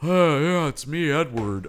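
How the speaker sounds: very slow, dumb-sounding voice, words dragged out. Mocking how the actors talk: dumb Edward voice. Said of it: "it's their dumb voice".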